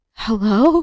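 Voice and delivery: scared, frightened, uncertain voice. Retelling opening the door to a stranger: imitating own scared voice. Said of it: "I was so scared, I literally was like".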